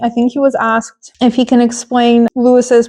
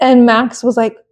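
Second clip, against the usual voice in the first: ordinary delivery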